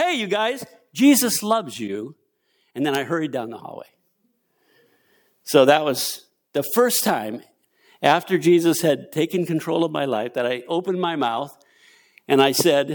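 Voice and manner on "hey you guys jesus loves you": loud, high-pitched calling-out voice. Retelling calling out to prisoners on the way to lunch, in a loud voice. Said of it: "I said in a loud voice".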